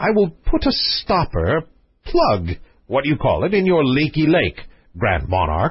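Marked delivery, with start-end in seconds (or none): none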